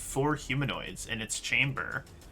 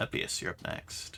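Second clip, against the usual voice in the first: ordinary talk, nothing marked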